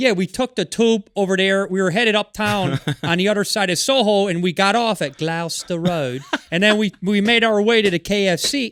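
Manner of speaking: put-on heavy, broad Chicago accent laid on thick. Imitating friends from back home, in a thick chicago accent. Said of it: "thick uh, Chicago accent".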